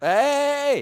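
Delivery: loud, high-pitched yelling.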